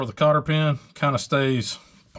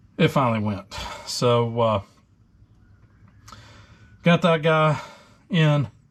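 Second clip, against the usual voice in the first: breathless, out of breath. Apologizing after straining to fit a part: out of breath. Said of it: "I'm out of breath right now".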